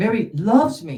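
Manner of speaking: stress on loves. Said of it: "Same words, completely different nuance".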